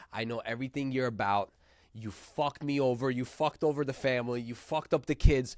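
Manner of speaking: mock furious, going-off rant. Retelling a man at a family party who just goes off: imitating someone going off angrily. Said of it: "just goes off".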